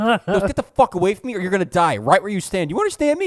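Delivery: hard, loud, high, threatening shouted voice. Retelling a dad threatening a man on the street: imitating someone yelling. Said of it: "And he's yelling at this dude".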